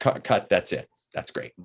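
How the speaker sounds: ordinary talk, nothing marked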